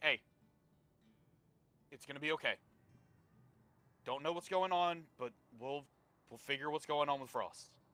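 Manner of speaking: steady, calm voice. A player character kneels by another character and speaks in a calm tone. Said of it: "speak in like a calm tone".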